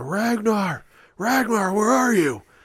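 shrill, very high, loud yelling. Retelling a scene where a father runs in looking for his son: imitating someone yelling. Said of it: "he's just immediately starts yelling".

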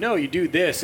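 put-on very strong Scouse accent. Act out Stevie dropping a ball and telling players what to do, in Stevie's very Scouse accent. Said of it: "in his very like Scouse accent".

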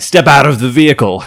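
barked shout. The narrator voices six figures at the ship's entrance shouting at the crew: yelling a command. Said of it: "They're yelling".

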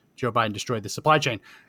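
ordinary talk, nothing marked

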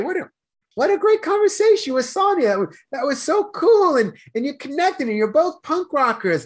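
high, cheerful, excited voice. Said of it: "I'll just celebrate".

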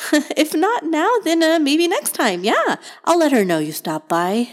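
very high, anxious but bright ant voice. The ant speaks to a visitor outside the colony, nervous, cheerful ant voice. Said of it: "It was nice to have someone around that was so cheerful, / The ant nervously rubbed her antennas together and looked around".

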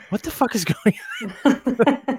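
high, squealed, laughing, shocked disbelief. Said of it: "And she's just like".

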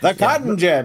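put-on high, old-timey 1920s newsreader voice. Showing how a phrase gets said, 1920s newsreader voice. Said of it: "we say it in a 1920s newsreader voice".

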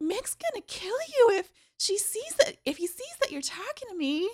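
very high-pitched voice. Quoting a female character's warning, very high-pitched voice. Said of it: "Very high-pitched voice".

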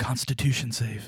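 whispered speech. Whispering to the host character in a game scene: whispering. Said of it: "Scotch Hops whispers to Ryan Eacrest".

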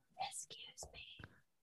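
breathy, hushed, very soft, very quiet whisper. Acting out a figure standing over sleepers: imitating a whisper. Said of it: "standing above them and whispering".

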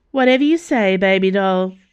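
said with a smirk. [name] answers Dana's remark about another man, smirking. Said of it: "[name] smirked".

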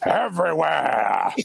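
hammy, over-the-top, rough and high-pitched. Telling a joke where Al Pacino walks in, over-the-top Al Pacino impression. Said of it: "That was a really good over the top Pacino".

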